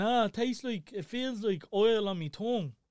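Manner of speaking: play-acted, tearful, sobbing crying-child voice. Retelling what a crying child said after a bite: imitating a crying child. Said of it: "he's still crying. He's saying".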